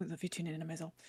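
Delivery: rattled off as quickly as possible, hushed. Character quickly returning a declaration of love, fast and quiet. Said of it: "Omen says as fast and quietly as they can".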